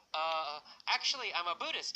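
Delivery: plain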